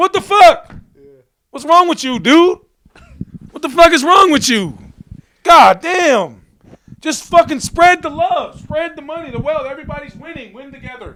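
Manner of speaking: pitched way up, loud, passionate yelling. Telling someone off for not paying Scotty, the speaker is yelling. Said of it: "I'm yelling because I'm passionate".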